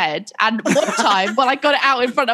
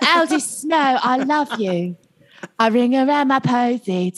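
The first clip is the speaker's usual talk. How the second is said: put-on posh British cartoon voice. Speaker acts out the British girlfriend from a film, as a Peppa Pig impersonation. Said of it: "are you doing like a Peppa Pig impersonation right now".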